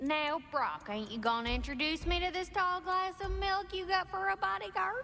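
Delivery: strong southern Tennessee drawl. Game character greets brock about his bodyguard: strong southern accent. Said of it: "Where did this accent come from".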